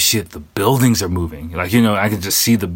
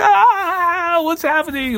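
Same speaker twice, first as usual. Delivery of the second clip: very high, drawn-out, frantic panicked shriek. Retelling how older ladies on a train reacted: imitating ladies freaking out. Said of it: "freaking out, going all crazy".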